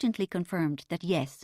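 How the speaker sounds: plain reading voice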